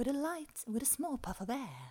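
put-on British stewardess accent. Retelling a voiceover recording in english: british flight attendant voice. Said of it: "full on, eh, brittisk flygvärdinna".

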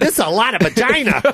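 casual, offhand delivery. Imitating Jameson standing next to the other speaker: imitating Jameson. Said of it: "Your Jameson is standing right next to you going".

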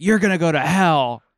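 loud, furious put-on screaming. Retelling a stranger yelling during road rage: imitating someone screaming. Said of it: "he was screaming at me".

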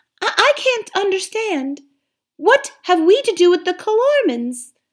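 very high, small, woolly little lamb voice. Narrator reads a young lamb asking the ape a question, in a high lamb voice. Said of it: "said the high voice of a woolly lamb".

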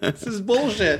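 high, slow, mock bitter voice.

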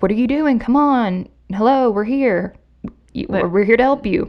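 insistent, urgent, but contained calling out. Retelling how an officer shouted at people facing a window: imitating a shout. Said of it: "he's shouting at them".

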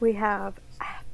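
theatrical whispered stage aside. Reading out a list of film titles, whispered. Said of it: "I like how that was whispered".

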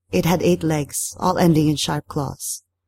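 plain reading voice

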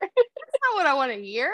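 put-on tearful voice, high and swooping through sobs. Retelling a talk with mom, the speaker plays their past self: retelling while crying. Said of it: "I'm like actively crying".

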